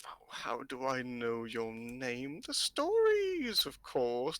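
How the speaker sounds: put-on crackly voice, crackling like dry weeds. A woman answers Xander's question about how she knows his name, crackling voice. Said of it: "her voice crackles like dry weeds".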